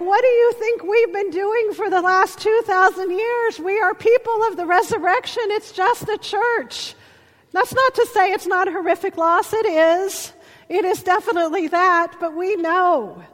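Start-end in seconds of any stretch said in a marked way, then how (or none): 0.0-7.0 loud preaching-style shouting. Speaker retells shouting back at a television broadcast, retelling yelling at the TV. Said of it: "I started yelling at it".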